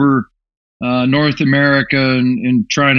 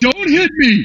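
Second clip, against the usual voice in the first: put-on panicked scream, higher pitched; 13 semitones higher than usual. Retelling how Joe screamed while in the lane: imitating Joe screaming. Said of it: "He was screaming".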